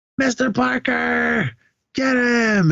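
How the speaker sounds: acted, very high, very slow, drawn-out scream. Retelling someone's shout as smoke bombs go off in the arena, imitating someone screaming. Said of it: "Veneris is just screaming".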